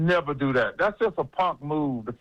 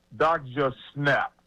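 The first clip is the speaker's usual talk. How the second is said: ordinary talk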